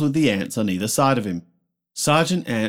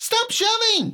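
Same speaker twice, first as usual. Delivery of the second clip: very high, shrill yelling shout. An ant in a marching line yells at the ant behind him. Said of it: "He yells to the ant behind him".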